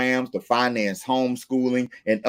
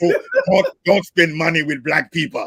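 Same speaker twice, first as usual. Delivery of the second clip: put-on mixed Russian and German accent; 4 semitones higher than usual. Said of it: "cross between a Russian and German accent".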